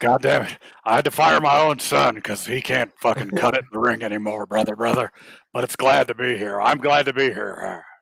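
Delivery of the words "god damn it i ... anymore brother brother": put-on gravelly chain-smoker voice. Answering how he's doing in a gravelly Vince McMahon voice. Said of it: "it's Gravely Voice McMahon".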